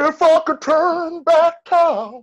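very high pitch, every word stretched out. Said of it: "That's my [name] impression".

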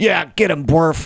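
high, yelled goblin voice. Voicing a goblin cheering on its leader in a fight: goblin yelling. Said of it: "one of the goblins yells out".

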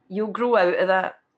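normal talking voice

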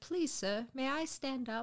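slow, very respectful, mock-polite deferential tone. Retelling how a character asks the guards for permission: imitating a very respectful request. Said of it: "very respectfully is like".

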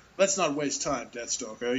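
ordinary talk

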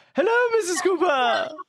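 very high-pitched voice. Greeting an old lady to win her trust: mirroring Mrs Cooper's voice. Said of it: "you're going to mirror their voice".

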